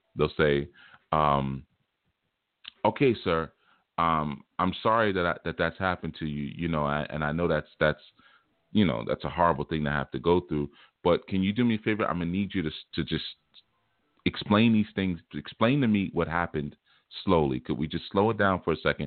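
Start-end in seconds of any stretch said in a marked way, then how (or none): none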